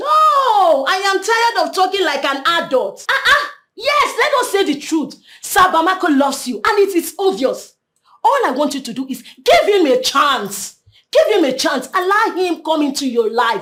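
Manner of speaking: shouting in anger. Told to stop ranting and talk as adults, the speaker refuses: angry shouting. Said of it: "I am sorry I shouted at you".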